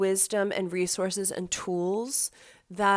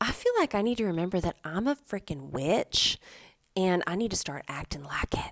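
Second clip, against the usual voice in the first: put-on Texas twang, laid on heavily. Quoting a friend's favorite saying, in an imitated Texas accent. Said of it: "she has a great Texas accent".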